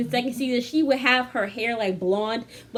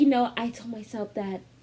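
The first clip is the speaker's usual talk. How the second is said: put-on acted drunken whisper; 3 dB quieter than usual. Retelling how a woman on the couch drinking whispered: imitating Ariana whispering. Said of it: "pause for five whole minutes as she's whispering".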